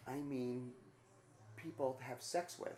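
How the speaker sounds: soft, barely there, confiding half-whisper. Retelling what she said while leaning over: imitating someone half-whispering. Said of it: "and she whispers".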